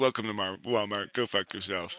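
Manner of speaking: flat, unenthusiastic deadpan. Imagining a store greeter in a cyberpunk world, flat, no enthusiasm. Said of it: "they say it with absolutely no enthusiasm".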